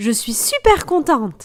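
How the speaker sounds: bright, bouncy, upbeat rhythm with joyful, lively tone. Showing how intonation changes a sentence's meaning, saying it joyful. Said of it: "j'ai mis un rythme qui est beaucoup plus joyeux".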